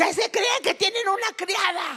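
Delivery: mock very high, shrill, yelled delivery. Describing coming home to disorder and starting to yell: retelling her own yelling. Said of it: "empiezo a gritar".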